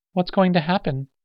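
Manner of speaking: very high voice, trembling and quavering. Narrator reads the girl's question to the others, quavering. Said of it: "The girl quavered".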